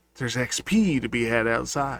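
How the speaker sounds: whispering in a put-on voice. Voicing a character who leans over and whispers to another: whispering in character. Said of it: "he leans and whispers".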